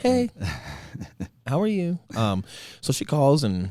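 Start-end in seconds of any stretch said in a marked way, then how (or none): 0.0-2.0 put-on girly voice, high and sing-song. Imitating the woman who calls him, in a put-on girl voice. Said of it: "that's just my girl voice".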